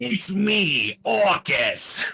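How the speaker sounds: very high, shrill, loud shriek. Voicing Orcus after a request for a Gilbert Gottfried voice. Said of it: "Just do your Gilbert Gottfried, like, sounding thing".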